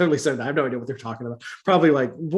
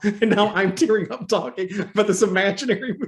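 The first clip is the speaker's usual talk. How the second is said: normal talking voice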